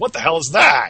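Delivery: cross, angry badger character voice. The game master voices an angry badger guy as a goat player runs past. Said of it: "The angry badger guy goes".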